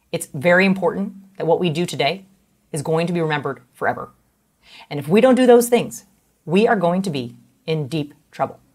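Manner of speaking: authoritative presidential style, each phrase end slung down. Doing an impression of Obama addressing Sasha and Malia: Obama impression, slinging words down. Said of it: "this is him slinging down his words".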